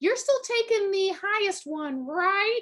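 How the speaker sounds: tiny, snotty, very high-pitched voice. Recalling someone's remark about grades last week; imitating a tiny snotty voice. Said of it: "in the like tiniest little voice that just sounded ever so snotty".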